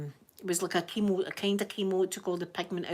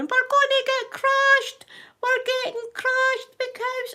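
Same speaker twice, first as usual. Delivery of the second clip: very high, loud, terrified, panicked screaming; 9 dB louder than usual. Retelling being in a car surrounded by cows: imitating own past screaming. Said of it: "I'm in the car screaming".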